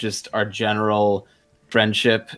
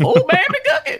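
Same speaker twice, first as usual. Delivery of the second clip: put-on old prospector voice, much higher pitch; 4 dB louder than usual. Asked to do a character voice for an old person, Old Man McGucket voice. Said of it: "Nailed it".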